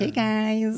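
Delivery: tiny, very high, squeaky helium-like voice. Describing a Snapchat voice-changing filter in conversation, squeaky Snapchat filter voice. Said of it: "So it's like a squeaky little voice like".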